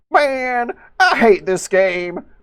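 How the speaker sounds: put-on slow, aggressive, drawled Southern accent. Retelling what a man said after getting sniped in a game, mock-aggressive southern accent. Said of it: "says in an aggressive southern accent".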